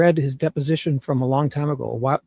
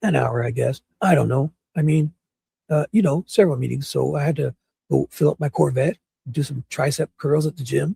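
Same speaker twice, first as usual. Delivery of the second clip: gruff, rough speech. Reading deposition answers aloud as Nanos: gruff voice as Nanos. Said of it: "answer in a gruff voice, that's me as Nanos".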